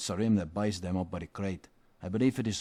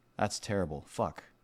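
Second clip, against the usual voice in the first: ordinary talk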